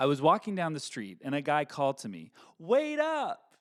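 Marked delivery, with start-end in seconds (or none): 2.6-3.4 very high, loud yelling voice. Acting out a stranger calling from down the street: yelling to someone. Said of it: "Sorry for yelling".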